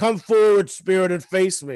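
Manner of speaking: high, loud challenging shriek. Retelling what he shrieked, imitating a shrieking fight-me-bro voice. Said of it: "shrieking this in his like fight me bro voice".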